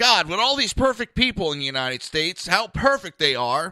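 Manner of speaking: loud, sarcastic, jabbing tone. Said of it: "I'm being sarcastic about it".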